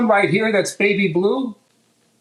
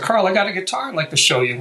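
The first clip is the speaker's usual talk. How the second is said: normal talking voice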